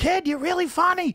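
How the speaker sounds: put-on crazy, wild Boston accent, very high-pitched. Retelling what was said after an opening set: Lenny Clark Boston accent. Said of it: "with that crazy Boston accent".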